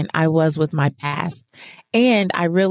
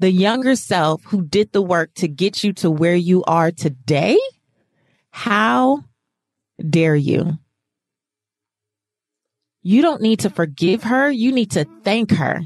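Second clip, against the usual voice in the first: mock disgust audible in the voice. Retelling a woman's answer to a question about forgiving your younger self, imitating a disgusted voice. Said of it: "the disgust in her voice when she said".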